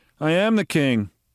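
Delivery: flat delivery with no emotion. You compare Trump's inflection to Paul's and demonstrate it in an emotionless Trump voice. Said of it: "No emotion in his voice whatsoever".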